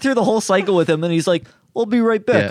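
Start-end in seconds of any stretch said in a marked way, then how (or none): 1.8-2.5 thick put-on Russian accent, pitched up, laid on heavy. Acting out a man leaving after the laundry cycle: imitating a thick russian accent. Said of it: "literally that accent".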